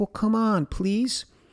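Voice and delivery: play-acted tiny, frightened pleading voice, very high. Retelling a little guy at a store cashier speaking to them: mock-scared Lil Kong pleading. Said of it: "he was all scared to be left alone".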